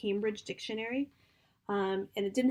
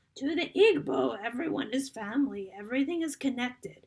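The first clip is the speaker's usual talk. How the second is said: put-on old grandmother voice, higher pitch; 3 semitones higher, 4 dB louder than usual. Reading a passage aloud to picture the scene: old grandmother's voice. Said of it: "I'm gonna do it in the grandmother's voice".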